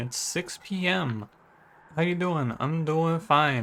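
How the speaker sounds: put-on Boston accent. Welcoming listeners back to the show, in a put-on boston accent. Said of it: "I slipped into my Boston".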